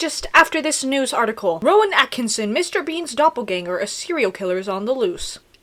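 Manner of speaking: ordinary delivery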